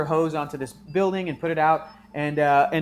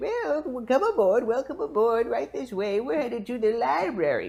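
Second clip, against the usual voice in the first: put-on higher little old lady voice; 7 semitones higher than usual. Voicing the little old lady piloting the space bus: little old lady voice. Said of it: "there's this little old lady who's, uh, piloting it. And she's like".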